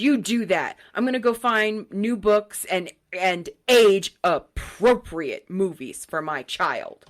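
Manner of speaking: acted, slow, near-spat words full of contempt. Retelling a library patron's reply, imitating her spitting with contempt. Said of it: "almost spitting with contempt".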